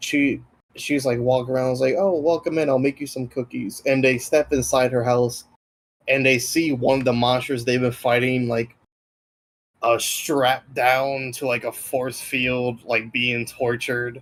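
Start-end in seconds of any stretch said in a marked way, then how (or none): 2.0-3.8 put-on sweet, kindly little old lady voice. Retelling how the players met an old druid lady: sweet grandma voice. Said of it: "sweet, like, grandma, like, kinda lady".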